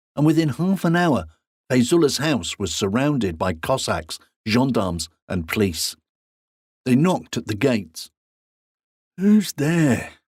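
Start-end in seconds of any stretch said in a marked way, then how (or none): 9.2-10.2 drowsy, just-woken, slightly high. A man answers a knock at his gates, sleepy voice. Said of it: "said Fayzullah in a sleepy voice".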